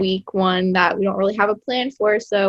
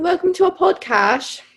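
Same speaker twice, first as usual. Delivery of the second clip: high-pitched, very high put-on British accent; 9 semitones higher than usual. Trying out podcast intros in different accents, in a British accent. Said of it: "British accent".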